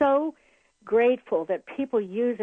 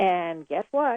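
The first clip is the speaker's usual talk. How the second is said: ordinary talk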